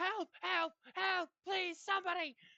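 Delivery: shrill, very high, very loud screaming. Voicing a captured character who is being held still: screaming for help. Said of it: "Elkdare is screaming".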